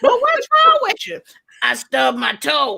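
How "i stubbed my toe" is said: fake sick voice, slower. Acting out a phone call to say you can't come in, fake sick voice. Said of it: "why you sound like that?".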